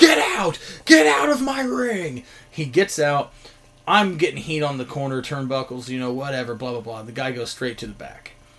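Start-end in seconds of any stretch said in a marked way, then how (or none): 0.0-2.2 mock screaming, very high and drawn-out. Recounting lashing a referee in the ring, quoting own past self; retelling a scream. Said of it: "just screaming".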